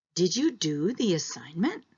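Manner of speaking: voice climbing up at the end on assignment. Past-tense yes-or-no question example in an intonation lesson, rising intonation at the end. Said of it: "It's also rising".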